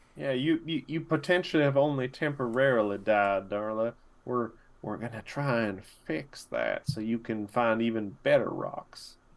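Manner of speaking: theatrical stage whisper. Speaking in character to a confused companion who must keep quiet: stage whisper. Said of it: "I was whispering. It was a stage whisper".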